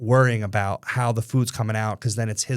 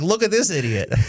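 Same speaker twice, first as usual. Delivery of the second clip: high, mocking, ribbing, teasing tone; 7 semitones higher than usual. Retelling what dorm neighbours said about a new tattoo: imitating football players teasing. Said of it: "They're like".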